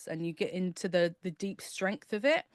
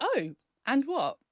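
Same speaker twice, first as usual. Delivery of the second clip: cheeky, dismissive, sassy tone, pitched up; 7 semitones higher than usual. Showing how the inner voice should answer a worry: sassy tone. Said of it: "that little sassy tone".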